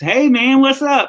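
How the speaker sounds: put-on loud, very high-pitched Southern US accent. Retelling a backstage greeting as his accent came back: southern us accent. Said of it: "I started hearing my Southern accent come back in".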